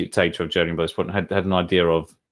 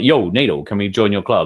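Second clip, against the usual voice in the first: put-on American accent; 2 semitones higher, 4 dB louder than usual. Retelling history in slang, someone asking to join NATO: American accent. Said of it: "in an American accent for some reason".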